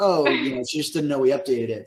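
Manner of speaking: normal talking voice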